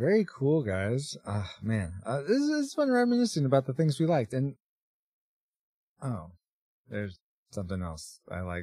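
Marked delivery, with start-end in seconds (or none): 6.0-8.6 deflated, disappointed, let-down tone. Recalling something else once liked while reminiscing: sounding disappointed. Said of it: "You sound disappointed".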